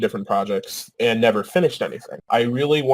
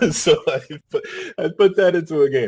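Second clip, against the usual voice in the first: laughing while speaking, much higher pitch; 5 semitones higher than usual. Explaining why they put personal experience into their game, laughing while speaking.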